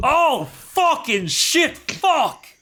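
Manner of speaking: very high pitch, slow and drawn out. Telling the others what a man from the show was like, doing a Bjorn impression. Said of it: "it's like he's here".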